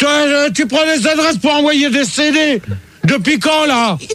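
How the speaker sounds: furious, high-pitched yelling outburst.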